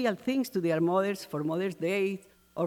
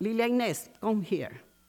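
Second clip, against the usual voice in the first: usual speaking voice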